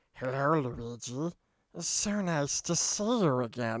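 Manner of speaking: creepy-cute voice, low, very slow, sweet drawl. Describing a show, the speaker imitates how Kirby sounded: creepy, cute Kirby voice. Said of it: "in a creepy, cute voice".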